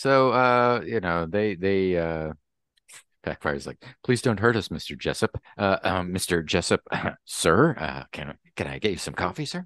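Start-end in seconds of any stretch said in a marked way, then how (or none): 4.0-9.6 terrified, cowering, groveling, begging tone. Voicing a terrified henchman begging not to be hurt: terrified pleading voice. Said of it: "Backfire has become just terrified of Jessup".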